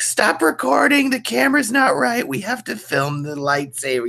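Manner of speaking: put-on very high, bossy child voice, screaming tantrum. Retelling directing lightsaber battles at eight, imitating his childhood screaming. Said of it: "screaming at my mother, like".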